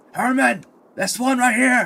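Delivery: very high-pitched yelled, calling-out voice. Narrating a fight, a wounded foe calls to an ally, yelling out. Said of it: "he's going to yell out and say".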